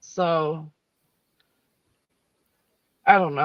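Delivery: voice breaking with emotion. Describing looking into those thought responsible, emotional, voice breaking. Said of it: "I did not mean to get emotional".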